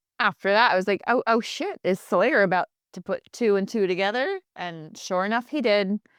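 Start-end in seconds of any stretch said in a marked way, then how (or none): none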